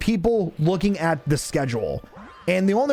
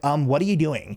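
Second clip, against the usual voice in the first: imitated snippy, attitude-filled tone; 2 semitones lower than usual. Retelling a coworker's snippy question: imitating a coworker's attitude. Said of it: "She comes with this attitude and she's like".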